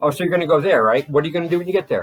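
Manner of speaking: aggressive, hard-pressing cross-examination, loud and high. Showing own habit of asking questions like a lawyer: imitating own aggressive lawyer-like grilling. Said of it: "like a judge or a fucking lawyer".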